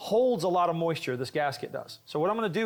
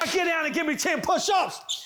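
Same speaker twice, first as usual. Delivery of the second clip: furious, pitched-up angry voice; 12 semitones higher than usual. In a skit, ordering the group to do ten push-ups at Sunstoppers: angry command. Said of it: "because I'm just so angry".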